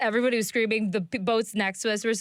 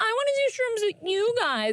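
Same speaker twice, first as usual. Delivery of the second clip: put-on yell, higher pitched; 13 semitones higher than usual. Retelling the mother yelling to join on the boat: imitating mom yelling. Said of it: "why are you yelling at me?".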